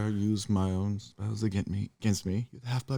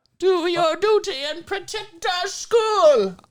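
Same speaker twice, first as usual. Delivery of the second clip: very high, very loud rallying voice; 7 dB louder than usual. Doing Professor McGonagall: Professor McGonagall voice. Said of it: "That was great".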